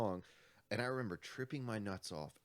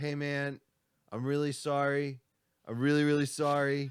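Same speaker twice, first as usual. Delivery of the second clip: put-on intoxicated voice, higher and louder; 5 semitones higher, 9 dB louder than usual. Retelling apologizing to a stranger in his driveway, imitating himself while high. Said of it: "tripping my nuts off and all fucked up".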